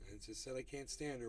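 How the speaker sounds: plain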